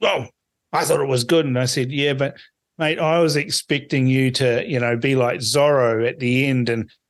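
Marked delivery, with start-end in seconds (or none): 0.0-1.4 quick, put-on, grumpy little grumble. Retelling teasing a man about an ad, the speaker quotes his reply: imitating a mock-grumpy voice. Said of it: "he put on his little grumpy voice".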